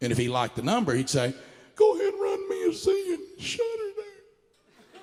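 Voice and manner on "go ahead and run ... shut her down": high breathless put-on voice, pitched even higher. Retelling Joe closing the shop for the night: imitating Joe's high breathless voice. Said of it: "I developed an impression of Joe".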